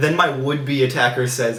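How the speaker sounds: ordinary talk, nothing marked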